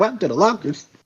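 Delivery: high, bright, cheerful tone with fright underneath. Voicing a character in a story being made up together: cheerful yet scared tone. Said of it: "in a cheerful yet scared tone".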